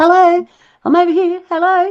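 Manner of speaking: very high, tiny little voice. Describing a rock that seems to speak to them, imitating a rock's tiny voice. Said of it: "It's like a little tiny voice that goes".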